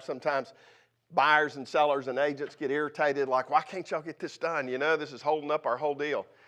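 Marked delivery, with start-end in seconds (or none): none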